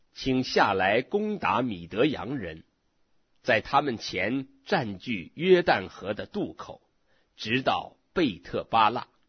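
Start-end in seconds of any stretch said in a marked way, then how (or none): none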